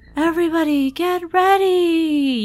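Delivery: faint, barely audible, high voice. Narrating a game scene, the speaker voices Close: barely audible. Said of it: "You can barely hear her".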